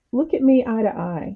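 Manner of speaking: put-on kindly, kind and gentle tone. Retelling what a roller rink owner said: imitating a kind voice. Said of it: "but in a very kind way".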